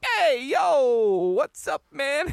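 put-on Manhattan New York accent. Retelling how the brother greets him: imitating a Manhattan accent. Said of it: "fucking Manhattan".

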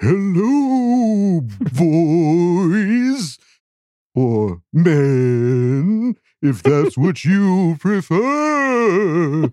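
put-on high haunting ghost voice, "boys" stretched. Reading out a question from the Broads: ghost voice. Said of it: "men isn't as funny in a ghost voice".

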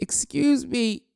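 put-on very high talking pig voice. Describing how the pig in a sheepdog competition sounds, in a talking pig voice. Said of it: "That's how the pig sounds".

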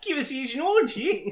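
loud, very high put-on New Zealand accent. Riffing on a line among friends, say it in a new zealand accent. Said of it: "That's a really specific New Zealand accent".

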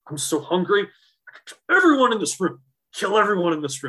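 mock seething rant. Retelling a hungry teammate's outburst in the clubhouse: imitating someone seething with hunger. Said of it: "seething, like, jumping up and down, teeth chattering".

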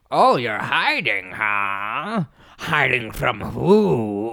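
put-on low, slow, gruff, cranky old man voice. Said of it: "and he's saying".

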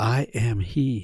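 whispered voice. Retelling the woman at the well story's ending line: retelling a whisper. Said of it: "he whispers at the end".

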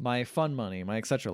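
ordinary delivery

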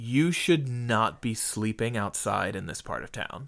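dry, dead-serious, no-nonsense, no laugh. Retelling what the EMT said after finding the speaker asleep: imitating a deadpan EMT. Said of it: "looked at me straight-faced and went".

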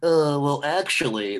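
pedantic know-it-all tone. Describing how a book character sounds when read: Kynes "well actually" voice. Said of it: "that's the voice I get when I hear".

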